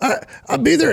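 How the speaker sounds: put-on very high-pitched older man. Imitating a stereotypical guy heard in a game lobby: high-pitched Cartman voice. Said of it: "he's got a little bit more of a high-pitched voice".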